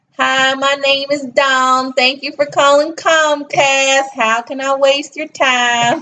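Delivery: put-on Southern accent. Retelling how they answered as a Comcast phone rep, Southern accent. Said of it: "That's a good Southern accent right there".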